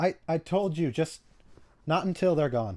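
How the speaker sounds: anxious, high, loud nervous voice.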